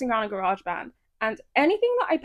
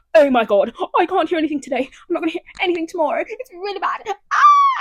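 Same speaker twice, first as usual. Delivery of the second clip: loud, frantic, swooping, spiralling panicked rant; 5 semitones higher, 5 dB louder than usual. Retelling own thoughts on nights when unable to hear: imitating own past panic. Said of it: "panicking to death about it".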